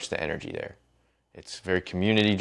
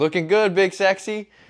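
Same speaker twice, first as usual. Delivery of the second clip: play-acted very high-pitched shouted call-out; 13 semitones higher, 6 dB louder than usual. Retelling shouting at a man posing awkwardly for photos, retelling own shout. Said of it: "And I just shouted at the guy".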